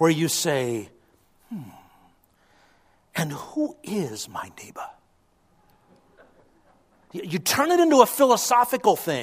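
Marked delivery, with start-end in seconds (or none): 3.1-4.9 lofty, breathy British lecturer's intonation, professorial. Showing how to ask a question philosophically: professorial british accent. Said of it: "you need kind of a British accent and sort of a professorial intonation".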